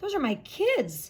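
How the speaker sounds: rough, scratchy voice, high and loud. Reading a story, a woman sees her students out of school: scratchy voice. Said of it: "she said in a scratchy voice".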